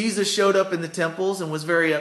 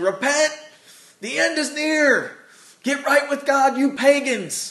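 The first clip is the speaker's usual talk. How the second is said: high, hollering street-preacher yell; 7 semitones higher, 3 dB louder than usual. Describing a guy in a sandwich board in town, imitating him yelling at people. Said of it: "he starts yelling at people".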